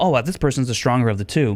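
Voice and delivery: ordinary delivery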